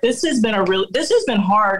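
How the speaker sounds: normal talking voice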